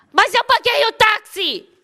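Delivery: self-important, boastful, high-pitched yelled shout. Retelling a man's boast about paying the taxi: imitating a man shouting. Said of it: "Por que que você fica gritando?".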